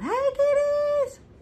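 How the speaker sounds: high, slow sing-song holler.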